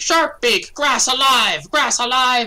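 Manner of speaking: loud, very high, shrill alarmed screech. A player voices creatures bounding to a tunnel hole, shrieking. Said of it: "they shriek".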